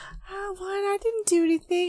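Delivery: high, put-on innocent voice, playing dumb. Retelling a scene from a movie: imitating someone playing dumb. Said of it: "he's playing fucking, like, stupid about it".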